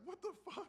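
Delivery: faint, very high-pitched, hushed, stunned, bewildered squeak. Retelling a stunned reaction in front of the camera: imitating a stunned reaction. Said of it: "She's blinded and she's going like".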